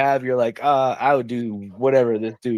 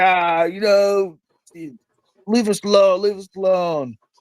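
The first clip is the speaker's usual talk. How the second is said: mock very drunk, dismissive voice, pitched up; 8 semitones higher than usual. Quoting his super drunk buddy in the back of the car; imitating a super drunk buddy. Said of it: "super drunk".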